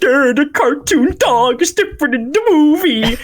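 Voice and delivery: high, nitpicking, complaining fanboy voice. Mocking own criticism of a movie dog as fanboy complaining: imitating a complaining fanboy. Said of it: "fanboy complaining".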